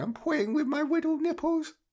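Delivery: put-on very high, cooing baby voice. Retelling a bit by Jimmy Bullard, the speaker does a Jimmy Bullard baby voice. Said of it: "in a baby voice going".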